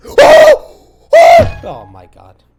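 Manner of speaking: very high, very loud, shrill swooping scream. Commentating a match as a team scores: screaming. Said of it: "Sorry for screaming".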